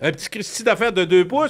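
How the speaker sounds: put-on high, rising, childlike kid voice.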